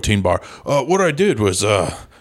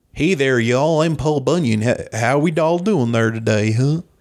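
Minnesota-accented voice; 4 semitones higher than usual. Asked about a voice for Paul Bunyan, try out a Minnesotan Paul Bunyan voice. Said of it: "Paul Bunyan is kind of a Minnesotan guy".

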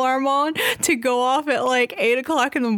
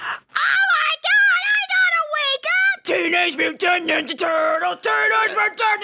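full, drawn-out, swooping scream; 8 semitones higher than usual. Retelling an alarm that woke everyone at eight: imitating Mikey screaming.

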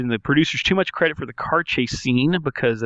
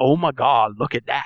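mock strange, over-the-top, freaked-out alarm. Recalling how Mario delivered a line, imitating Mario's freaked-out line. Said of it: "This line delivery is".

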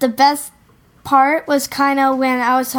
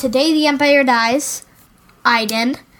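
ordinary delivery

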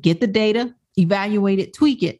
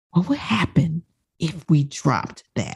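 whispered, hushed; 4 semitones lower, 4 dB quieter than usual. Asking a question, whispering. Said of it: "I'm whispering".

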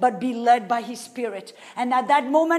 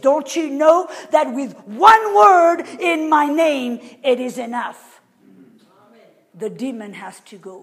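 forceful, commanding, very strong and loud; 7 dB louder than usual. Retelling what he says next to the listener; retelling in a very strong voice. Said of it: "with a very strong voice".

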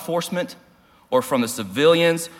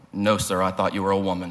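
put-on shame, humble, much lower pitch; 5 semitones lower than usual. Retelling his answer to Mike's question, imitating a humble, ashamed reply. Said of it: "I responded humbly and ashamed".

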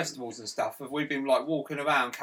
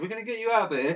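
patronising, talking-down voice, pitched up; 8 semitones higher than usual. Imitating a boss reassuring a woman: imitating talking down like to a dog. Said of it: "looks down at her like she's a dog".

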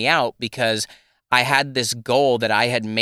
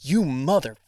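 put-on angry swearing outburst; 3 semitones higher than usual. Retelling swearing at a project off camera: imitating own angry swearing. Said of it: "I'm so angry".

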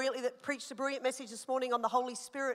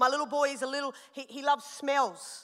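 normal talking voice

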